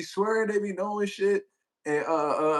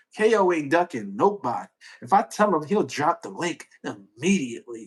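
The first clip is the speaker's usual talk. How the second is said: put-on, sassy, attitude-laden tone; 5 semitones lower than usual. A streamer reads a chat message aloud, in a mock-sassy reading. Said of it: "That's how I read".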